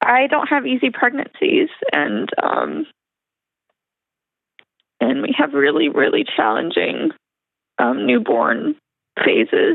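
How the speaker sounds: close to tears, teary. Answering on the phone why a third baby girl weighs heavy: teary-eyed. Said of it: "I'm gonna be teary-eyed".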